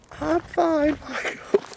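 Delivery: put-on high grandfather voice. Acting out a phone call, the comedian answers as Grandad in a very high voice. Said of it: "You got a very high voice, Grandad".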